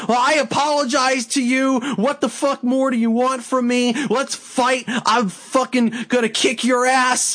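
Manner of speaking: play-acted, furious screaming rant. Recounting a scene where one man starts yelling at another, imitating someone screaming. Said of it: "fucking screaming".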